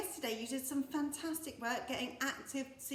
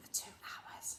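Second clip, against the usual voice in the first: soft, hushed whisper. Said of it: "Whisper it quietly".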